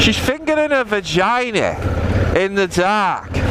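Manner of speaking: high, exaggerated Scouse accent.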